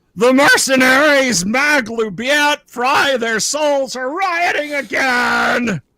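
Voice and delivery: shrill, very high, full-volume shriek. Voicing a fleeing cook who yanks a door open: yelling at the top of his lungs. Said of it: "yells at the top of his lung".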